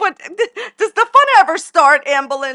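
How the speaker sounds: talking through laughter. Apologizing for laughing while asking a question: laughing while talking. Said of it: "I'm sorry I'm laughing".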